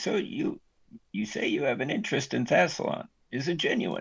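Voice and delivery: hushed, breathy half-whisper under the breath. Voicing a game character speaking under his breath: quieter voice. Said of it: "says in a quieter voice".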